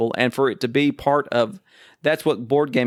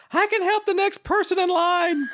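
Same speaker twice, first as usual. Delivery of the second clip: thin, weak, frantic, very high-pitched panicked yell. Retelling a man in the food court yelling out to the crowd, imitating a weak, high-pitched panic voice. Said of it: "he yells out in this very weak, high-pitched, panic voice".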